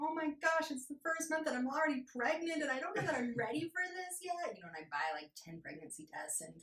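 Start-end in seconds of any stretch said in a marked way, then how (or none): 0.0-4.6 mock very high, very loud, tearful, nervous crying. Retelling own first month off birth control: mock nervous crying. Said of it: "being so nervous and crying".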